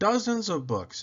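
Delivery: ordinary delivery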